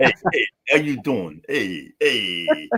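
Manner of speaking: put-on New York accent. Joking about whether he must now talk like a New Yorker, in a mock New York accent. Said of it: "do I have to talk like a New Yorker then?".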